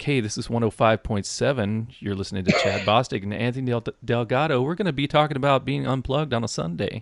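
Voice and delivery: soft, calm, mellow radio DJ voice. Showing how to open the Sunday episodes, in a soft radio voice. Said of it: "let's use that soft radio voice".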